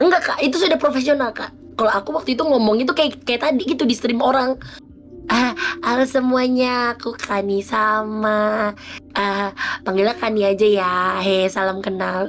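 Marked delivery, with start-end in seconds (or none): 5.9-10.9 mock doubtful, uncertain, slow, hesitant tone throughout. Reenacting her past self-introduction on stream, mock-hesitant, unsure intonation. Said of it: "ada keraguan di dalam intonasi suara saya".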